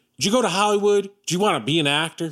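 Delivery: high cross-examining tone. Retelling a television interview, imitating the interviewer Charlie Rose.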